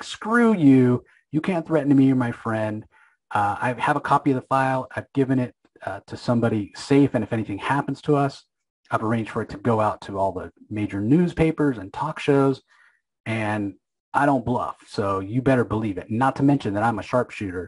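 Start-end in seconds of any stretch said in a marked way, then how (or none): none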